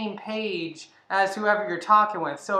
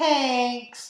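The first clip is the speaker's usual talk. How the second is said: middle-schooler voice, much higher; 4 semitones higher than usual. Showing how they read a message they get, middle-schooler voice. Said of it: "I read it like a someone who just got to middle school".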